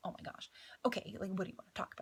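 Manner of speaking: acted anxious panic. Retelling panicking beside a woman on the sidewalk, acting out past panic. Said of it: "I was panicking".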